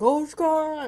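very high-pitched, agonised scream of pain. Narrating how an arrow pinned a guy's hand, retelling his scream of pain. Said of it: "he's screaming".

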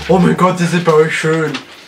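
loud, gushing, adoring fan voice.

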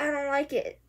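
ordinary talk

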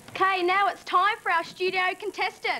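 excited, loud delivery. Repeating a whispered line down the camera as instructed, loud and excited. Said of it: "say it in a loud voice right down that camera there and act excited".

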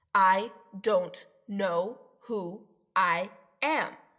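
slow, word by word, a beat between each. The narrator reads a character's line to the doctor, pausing between every word. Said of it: "paced his next sentence like there was a social media hand clap between every word".

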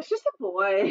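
ordinary delivery

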